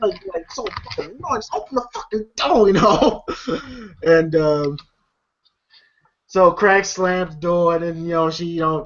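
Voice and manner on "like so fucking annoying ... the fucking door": annoyed, frustrated grumble muttered under the breath. Describing frustration with one's mother, imitating talking under the breath. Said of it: "talk under her breath".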